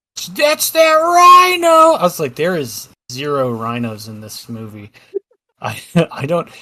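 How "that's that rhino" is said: high, piercing, very loud shout, "rhino" stretched. Recalling a lady with her kids in an arcade line, retelling a woman yelling. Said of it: "she's like yelling".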